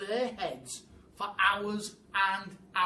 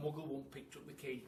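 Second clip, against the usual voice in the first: ordinary delivery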